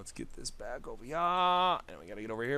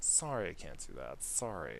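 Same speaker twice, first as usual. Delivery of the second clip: regretful, very sorry "no"; 7 semitones lower, 8 dB quieter than usual. Voicing a character's line while writing a scene: apologetic. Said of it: "we'll put her apologetic".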